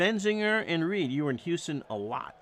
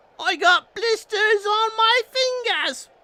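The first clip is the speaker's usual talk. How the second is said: terrible fake English accent, very high and shrill; 9 dB louder than usual. A self-described whitest dude in Burlington, Vermont, puts on a very bad English accent. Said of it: "in a very bad English accent".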